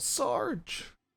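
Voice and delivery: very high-pitched calling out. Voicing a trooper calling to the fallen sergeant: calling out. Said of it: "calls out".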